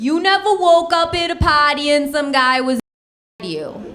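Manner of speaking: put-on heavy, thick, laid-on Boston accent. Retelling what a girl at a college said: thick Boston accent. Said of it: "with this thick Boston accent".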